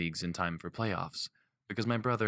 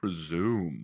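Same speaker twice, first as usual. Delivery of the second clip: deliberately deepened, low, teasing put-on voice. Narrating a woman making fun of the narrator's word, in a mock low voice. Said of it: "she says in a mock low voice".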